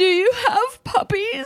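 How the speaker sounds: put-on very high, tearful, crying voice. Retelling calling about a puppy: retelling own crying plea. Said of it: "I was, like, crying".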